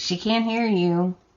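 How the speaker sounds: plain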